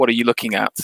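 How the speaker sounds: ordinary delivery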